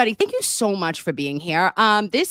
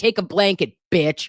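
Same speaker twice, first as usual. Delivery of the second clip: mock child voice. Imitating the kid from the commercials: imitating the commercial kid. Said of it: "He's like".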